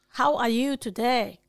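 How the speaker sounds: fake Chinese accent in English. Asked by another speaker to speak Chinglish, giving it a go in a put-on Chinglish accent. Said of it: "Speak my Chinglish".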